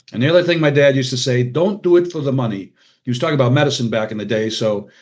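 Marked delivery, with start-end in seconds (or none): 1.5-2.8 put-on Hungarian accent. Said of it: "forgive my Hungarian accent".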